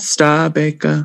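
put-on imitated German accent. Saying a name the way its owner says it: imitating Jürgen's German accent. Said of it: "I think you're nailing it".

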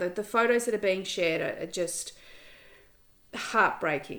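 tearful, choked-up voice on the edge of tears. Addressing an audience, the speaker is tearing up. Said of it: "I'm tearing up now".

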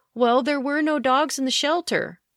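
high, put-on whiny mock voice. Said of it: "They even said".

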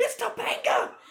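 mock giddy, loud, excited burst of fan excitement. Retelling a wrestler's reaction when a surprise guest appears: imitating someone freaking out. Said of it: "starts freaking out".

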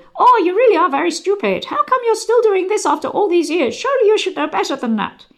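high-pitched, squeaky cartoon voice. Saying accents are hard, attempting a Mickey Mouse voice. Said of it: "I'm not very good at Mickey Mouse here, but you want some kind of weird kind of".

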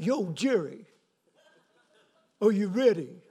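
New York way of talking. Retelling what Dennis from New York said to Jerry, in a Rocky Balboa voice, New York accent. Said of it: "He talked like Rocky Balboa".

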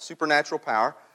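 clear, heavy stress on supernatural.

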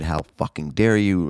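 imitated angry ranting tone. Retelling what the actress said on the phone: imitating someone ranting angrily. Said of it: "The whole ranting and raving".

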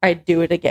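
ordinary talk

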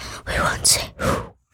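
soft, secretive whisper.

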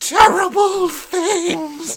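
shrill scream, very high and at full volume. Narrator reading a story, a woman following the retreating children; screaming. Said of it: "screaming once more".

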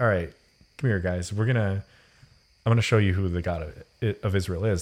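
usual speaking voice

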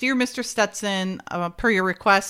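ordinary delivery

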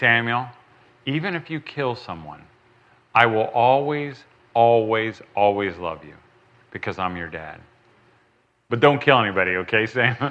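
grave, earnest voice. A dad recalls answering his son at bedtime, retelling a very serious tone. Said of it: "And then I would get really serious".

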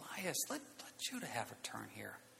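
very quiet, low, hushed whisper. Retelling what they whispered to him about letting the other have a turn. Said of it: "I like whispered to him".

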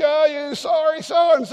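very high, furious, angry shouting. Acting out a heated family argument at home: imitating someone yelling angrily. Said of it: "you're yelling at your kids".

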